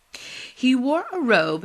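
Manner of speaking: ordinary delivery, nothing marked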